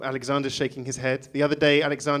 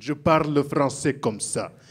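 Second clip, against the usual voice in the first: put-on French with thick Arabic accent. Imitating Gladys speaking French: imitating Gladys's thick Arabic-accented French. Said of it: "which she spoke with a thick Arabic accent".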